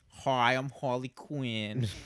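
put-on cringey awards presenter voice. Retelling a cringey awards-show intro: imitating Harley Quinn. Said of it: "She's like".

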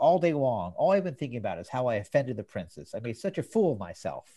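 ordinary delivery

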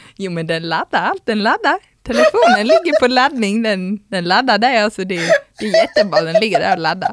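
put-on Scanian Swedish accent. Retelling talking aloud to themselves alone in the changing room, in Scanian accent. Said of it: "jag fortsatte ganska länge liksom på skånska".

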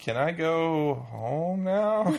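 high, very slow, drawn-out voice, sounding done with everything. Imitating a film character after her accident: imitating Rachel McAdams's character. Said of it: "incredibly good imitation of her character".

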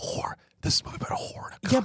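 put-on whisper yell. Retelling what was said aloud during a movie: imitating own whisper yell. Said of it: "I whisper yelled".

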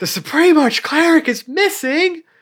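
very high, shrill, all-out top-of-the-lungs shout. Recapping a game session where a character announces news to a crowd, retelling Boris's shout. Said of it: "shouted at the top of her lungs".

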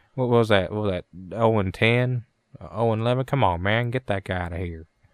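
put-on southern accent, fifty-year-old man voice. Retelling what another player said during the game; imitating a fifty-year-old Southern dude. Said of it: "He sounds like a fucking fifty-year-old southern dude".

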